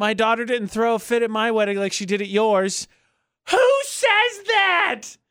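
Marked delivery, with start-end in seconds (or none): 0.0-2.9 play-acted, somewhat catty, needling tone. Retelling what a bride said after her wedding: imitating a somewhat catty tone. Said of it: "in a somewhat catty tone".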